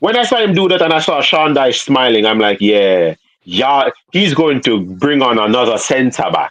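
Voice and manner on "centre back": strong emphasis on centre back. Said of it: "why do you say it like that".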